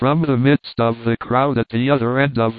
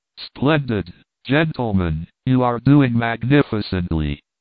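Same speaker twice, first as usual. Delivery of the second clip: plain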